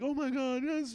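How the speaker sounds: very high, loud, squealed yelp.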